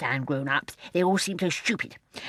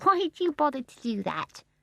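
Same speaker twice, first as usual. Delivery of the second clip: amused, light, higher pitch, laughter behind the words; 7 semitones higher than usual. Barbara asks John why he bothers with his toes, soft, amused. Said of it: "in her soft, amused voice that seemed always to be full of laughter".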